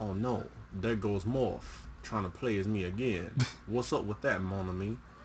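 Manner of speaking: poor put-on Cajun accent. Seeing Morph imitate him, the speaker as Gambit talks in a bad Cajun Gambit voice. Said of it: "Your Cajun is terrible".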